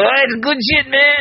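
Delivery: terrible put-on voice, pitched way up high.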